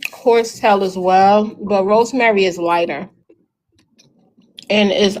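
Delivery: speaking with food in mouth. Answering a question in a conversation, talking while eating. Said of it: "sorry I'm eating".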